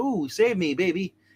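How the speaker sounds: ordinary talk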